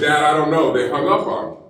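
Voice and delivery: ordinary delivery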